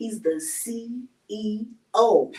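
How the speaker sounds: deliberately slow pace. Host wrapping up an interview, introducing the guest, saying it slowly. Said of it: "I gotta say that slow now".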